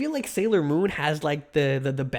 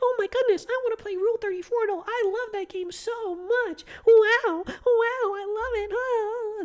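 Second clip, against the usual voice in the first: mocking, very high, slow, drawn-out gushing. Streamer imitating chat viewer Omo to his face, mocking Omo's voice. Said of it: "That's what you sound like".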